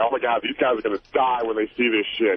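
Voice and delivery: ordinary delivery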